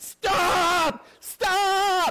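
shrill, loud scream, very high-pitched. Retelling the moment his dad started screaming at him, imitating dad screaming. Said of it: "my dad starts screaming".

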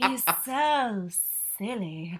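sultry, sensual purring voice. Correcting a co-host's impression, imitating Phaedra saying it sexily. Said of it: "She said it like sexily, sensually".

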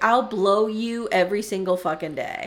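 ordinary talk, nothing marked

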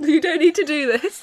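high, laughing, mocking, taunting scolding voice.

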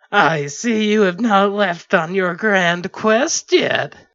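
very loud, high, nasal speaking voice. A cowled figure addresses him about his quest, in a high nasal voice. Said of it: "in a high nasal voice".

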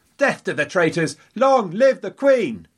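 loud high crying out. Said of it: "came the cry".

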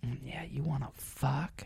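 slow, lingering, drawn-out whisper. Retelling what an older woman at a bar said: imitating a whisper.

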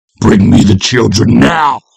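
full-throated, very loud, rough bellowing roar. A policeman answers a woman telling him to leave her property; bellowing. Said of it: "The policeman bellowed".

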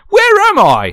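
put-on Cockney accent. Telling a made-up story, voicing Judi Dench waking in hospital: Cockney accent. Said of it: "She's Cockney".

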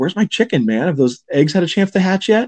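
acted-out rude, pushy, heckling voice. Retelling a movie scene, imitating someone hassling a waiter. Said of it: "hassling the waiter".

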